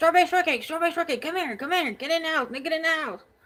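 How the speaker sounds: acted screaming. Recounting calling her dog into the house, retelling a scream. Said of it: "And I'm screaming".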